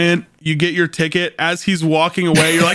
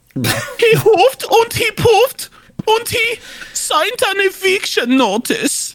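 very high-pitched German accent. Asked to do an impression of the pigs from Shrek: Shrek Three Little Pigs impression. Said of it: "Do an impression of the three little pigs from Shrek".

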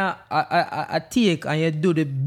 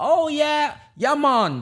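bad over-the-top fake Jamaican accent, sing-song, high; 9 semitones higher than usual. Showing the bad accent american movies want: exaggerated bad jamaican accent. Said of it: "Them want me sound".

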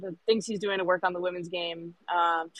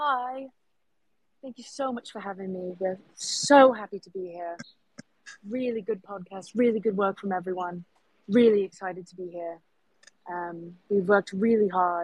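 smooth, polished, well-rehearsed guest-style delivery; 3 dB louder than usual. Doing an impression of Rob Kane as a guest on the podcast: impression of Rob Kane. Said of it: "this is me on the, on your podcast right now as Rob".

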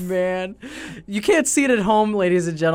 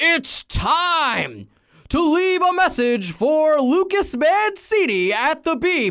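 pitched-up ring announcer voice, drawing out time; 11 semitones higher than usual. Demonstrating a phone message he would record for a fee, do a Bruce Buffer impression. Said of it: "Bruce Buffer to be like".

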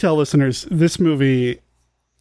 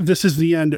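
plain

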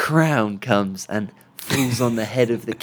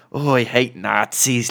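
clumsy put-on Irish accent, very drawn out. Speaker imitating a character's accent from a script, in bad irish accent. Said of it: "So it's like my level Irish accent".

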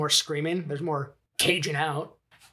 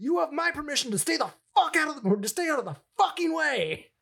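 put-on, very high, shrill screamed outburst; 11 semitones higher than usual. Retelling a movie scene where he screams at a mother, imitating someone screaming. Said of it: "he just turns and screams at her".

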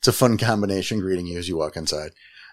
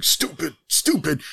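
muttered under the breath, pitched up; 9 semitones higher than usual. Play a one-armed man smashing himself in the face with a helicopter blade, muttering. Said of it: "You hear him muttering".

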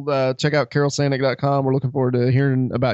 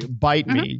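normal talking voice

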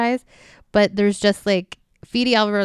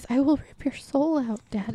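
put-on soft, high, small little-girl voice; 5 semitones higher, 6 dB quieter than usual. A speaker quotes a deadite's line, doing its little girl voice. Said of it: "she still does the little voice".

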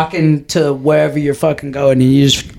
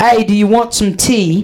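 fake English accent in a higher voice; 5 semitones higher than usual. Asked what an English accent is, the speaker tries one: fake English accent. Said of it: "What's a fucking English accent?".

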